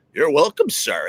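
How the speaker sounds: strange, weird mechanical robot voice. Imagining a Roomba bringing him a beer and answering his thanks, Roomba robot voice. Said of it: "it has some weird robot voice".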